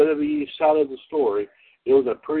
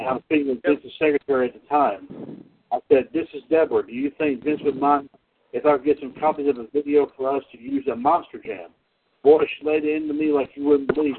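ordinary delivery

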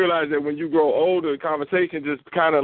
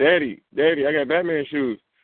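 put-on slow, small boy's piping little-kid voice. A father retells his son showing off new shoes, imitating his young son. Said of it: "And he's like".

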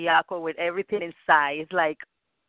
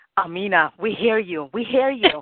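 urgent, frantic, insistent calling out, rising pitch; 4 semitones higher than usual. Retelling calling out to amina while going crazy: imitating own frantic calling. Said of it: "I was here going crazy like".

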